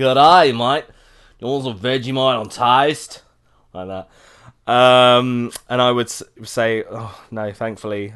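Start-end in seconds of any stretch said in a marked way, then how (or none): 0.0-3.2 put-on Aussie Australian accent. The speaker jokingly imitates Australians: Australian accent. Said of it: "That was an excellent rendition of an Australian accent".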